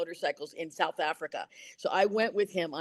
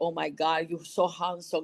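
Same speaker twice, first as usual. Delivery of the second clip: put-on Cuban-accented English, slower. Retelling walking in and getting cast, in Cuban-accented English. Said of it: "Cuban accented American".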